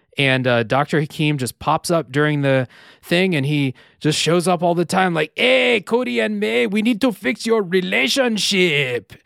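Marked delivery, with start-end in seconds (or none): 5.4-9.1 high, heavy, exaggerated put-on Mexican accent. Speaker imitates Dr. Hakeem addressing Cody and May: stereotypical Mexican accent as Dr. Hakeem.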